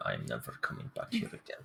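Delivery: low, soft muttered aside. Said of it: "I mutter".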